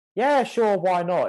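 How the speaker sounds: sarcastic, very high, shrill and very loud. Retelling own reply to a friend's question: retelling own sarcastic reply. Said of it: "In a kind of sarcastic way".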